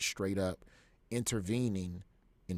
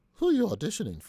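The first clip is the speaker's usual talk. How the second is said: bad, very high, loud lady voice; 11 semitones higher, 8 dB louder than usual. Speaker retells asking Wendy for a day off on tour; her reply in a terrible Wendy voice. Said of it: "It's a terrible Wendy voice".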